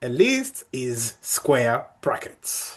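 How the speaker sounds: slow, deliberate, emphatic delivery. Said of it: "This is very important".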